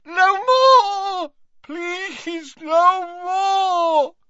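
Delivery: shrill, very high, slow, drawn-out agonized yell. Dumbledore, made to drink a potion, yells again: yelled in agony. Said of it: "he yelled again, as though his insides were on fire".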